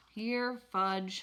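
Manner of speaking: ordinary talk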